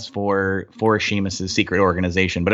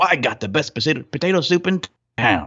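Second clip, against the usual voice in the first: put-on silly, doddering old man voice, pitched up; 6 semitones higher than usual. Describing a game character taking the players' soup orders, silly old man voice. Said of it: "he's kind of a silly old man".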